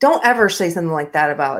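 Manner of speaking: stern, harsh, angry scolding tone. Someone asks to see them be angry again: angry, scolding. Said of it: "can you be angry again?".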